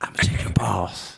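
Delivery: whispered voice. Retelling what a woman said to him at fourteen, imitating her whisper. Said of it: "And she whispered it".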